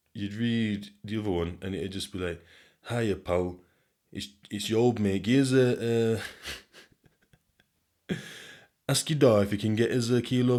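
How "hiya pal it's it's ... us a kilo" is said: put-on elderly man voice, northern. Reading out the other one asking for a kilo: imitating an old Northeast man. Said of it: "It just sounds like an old man".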